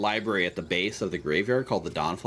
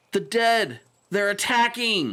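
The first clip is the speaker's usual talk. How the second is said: frantic, very high shouted cry; 11 semitones higher, 4 dB louder than usual. Narrator voicing a guard running past toward the library: guard shouting. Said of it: "Shouts a guard".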